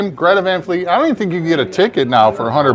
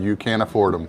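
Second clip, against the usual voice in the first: mock very low, flat, expressionless deadpan; 9 semitones lower, 8 dB quieter than usual. Retelling what the band's dad and manager said after the show: retelling a deadpan reply.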